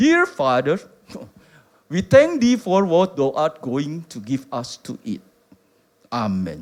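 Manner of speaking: put-on English accent, low-pitched. Retelling how George Muller prayed when there was no food, as George Muller in an English accent. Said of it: "Itu logat Inggris kali gitu".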